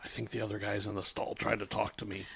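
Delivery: soft, hushed, complaining tone. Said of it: "everyone's always like".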